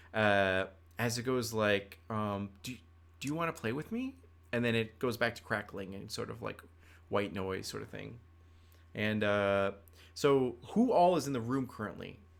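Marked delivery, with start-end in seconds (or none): 2.6-4.1 tiny, high-pitched, quick voice through static. Telling a story of a voice breaking through static: small voice. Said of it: "a small voice".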